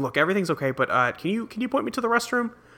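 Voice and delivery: discreet, leaning-in half-whisper. Retelling a scene where a character leans over to the queen: imitating a half-whisper. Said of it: "leans over and whispers to the queen".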